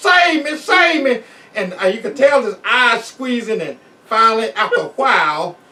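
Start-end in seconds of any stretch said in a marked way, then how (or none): 0.0-1.2 put-on high, drawn-out, stretched-out holler. Retelling the mess sergeant clinging on after lightning: imitating someone hollering. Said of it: "he was just hollering".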